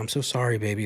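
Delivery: put-on overly apologetic tone. Retelling a couple's morning argument, voicing the woman's overly apologetic reply. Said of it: "overly all apologetic".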